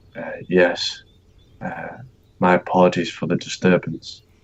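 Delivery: hushed, breathy whispered voice. A player's character answering an elf's question, whispering back. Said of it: "whisper back".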